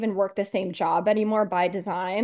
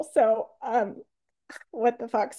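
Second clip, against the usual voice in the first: crying, much slower; 3 semitones higher than usual. Telling the group how grateful they are for the program, crying. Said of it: "I don't know why I'm crying so much".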